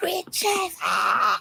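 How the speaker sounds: piercing, very high, shrieking scream. Retelling screaming at a concert as the performer appeared: imitating own past scream. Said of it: "And I was screaming".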